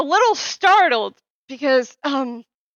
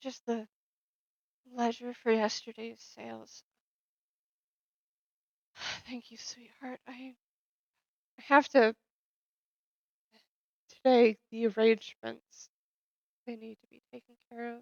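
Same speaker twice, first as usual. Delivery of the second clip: hushed, barely-there, very quiet soft voice; 12 dB quieter than usual. Roleplaying a shaking woman answering after a coat is put around her: quiet voice. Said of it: "because I was being kind of quiet".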